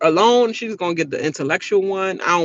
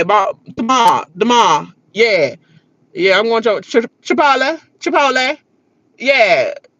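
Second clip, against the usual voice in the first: over-the-top caricature D.C. accent; 3 semitones higher than usual. A D.C. native shows how outsiders think D.C. people sound, stereotyped D.C. accent. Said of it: "Everybody don't sound like".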